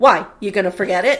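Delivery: mock deadpan delivery. Retelling a waiter's reply to a customer: imitating a deadpan reply. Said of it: "dead face".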